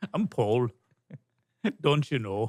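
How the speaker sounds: fake Liverpool Scouse accent. Recalling playing an improv character among actors at a table; fake Liverpool accent. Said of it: "this fake Liverpool accent".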